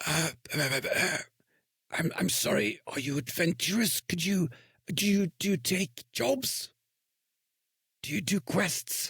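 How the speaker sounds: high, halting, stammering whisper under the breath. Game master voicing a man who moves closer to the players, whispering under his breath. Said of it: "he he whispers under his breath".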